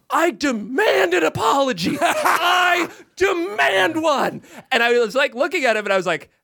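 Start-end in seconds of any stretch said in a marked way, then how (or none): 0.1-4.4 put-on very drawn-out, high, slow yell. Telling how a mocked guest stamped his feet and demanded an apology; retelling a yell. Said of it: "And he yells".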